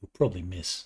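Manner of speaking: quiet, barely voiced muttering. Speaking as Soren in a role-playing scene, muttering under breath. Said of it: "Soren will mutter under his breath".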